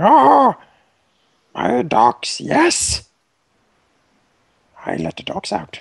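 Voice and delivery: slow, drawn-out goblin voice. Voicing the goblin Skull Cleaver charging in: Skull Cleaver voice. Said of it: "Skull Cleaver moves up here. Like".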